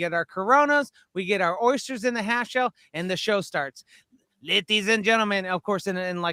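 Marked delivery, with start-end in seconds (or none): 4.4-5.5 put-on announcer voice with really heavy Mexican accent. Retelling a show announcer's opening line in a really heavy Mexican accent. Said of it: "a really heavy Mexican accent that I'm doing".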